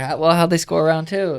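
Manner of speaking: put-on curious tone. Repeating own old line to a reporter: imitating a curious tone. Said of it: "like, curious".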